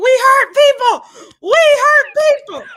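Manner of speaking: put-on screaming. Retelling how MJF reacted to a thumbs up: imitating MJF screaming. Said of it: "he started screaming".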